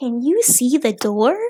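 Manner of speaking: slow, drawn-out, loud, condescending, patronizing. Complaining about a cartoon explorer girl, imitating Dora the Explorer, condescending. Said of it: "something about her just being like".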